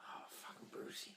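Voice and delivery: soft whispered aside. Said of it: "I'm like".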